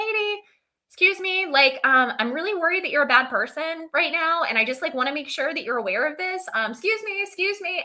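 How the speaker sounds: very high, nagging little voice. Imagining a figure following the speaker and raising his hand, in a higher voice. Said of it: "he has a higher voice in my head".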